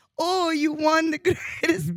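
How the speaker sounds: put-on very high, little voice with a Spanish accent.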